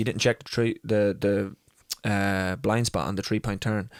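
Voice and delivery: ordinary talk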